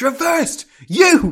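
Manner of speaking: play-acted aggressive referee yell, very high and shrill. Retelling a referee's call after a punch: imitating an aggressive referee call. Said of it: "It's more aggressive than that".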